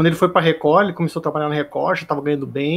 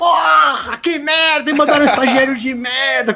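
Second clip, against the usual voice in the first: put-on shrill yelling, very high; 9 semitones higher, 3 dB louder than usual. Retelling how the boss reacted to a new intern: imitating Quilão yelling. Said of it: "Começou a gritar".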